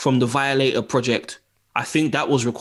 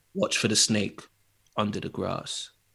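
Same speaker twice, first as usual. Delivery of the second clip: calm, hushed whisper; 5 semitones lower, 8 dB quieter than usual. Showing how a wrestler threatened without raising his voice: calm Jake Roberts impression. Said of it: "Something just calm".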